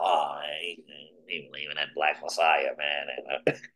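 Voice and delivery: low, quiet, dismissive, doubting scoffing voice.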